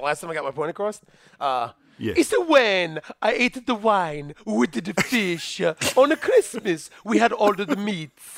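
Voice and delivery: heavy, thick put-on Italian accent, laid on thick. A guest answers the host's question as asked, in a thick Italian accent. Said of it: "answer in a very thick Italian accent".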